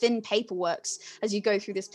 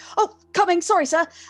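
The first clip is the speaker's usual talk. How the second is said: put-on high, raised, gangly, young, clumsy-sounding voice; 9 semitones higher, 7 dB louder than usual. Voicing a clumsy assistant called over by his employer: clumsy young assistant voice. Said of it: "you hear a voice go".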